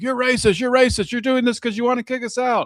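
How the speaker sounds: high yelling. Describing a clip where a man yells at another man, imitating him yelling. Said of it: "is just yelling at him like".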